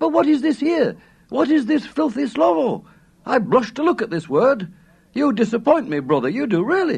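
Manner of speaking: very high, prim, feigned scandalized horror. Leafing through a man's book, the narrator retells teasing its owner, mock-shocked voice. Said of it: "Then I said in a very shocked type goloss".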